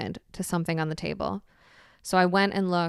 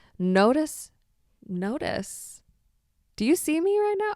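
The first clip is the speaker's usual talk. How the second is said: slow, calm delivery, higher pitch; 9 semitones higher, 3 dB louder than usual. Telling listeners about drinking a crazy tea, speaking slowly and calmly. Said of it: "I am speaking slowly and calmly".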